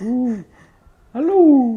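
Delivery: high, proud owl call voice. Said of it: "I have to try to get my tone like that".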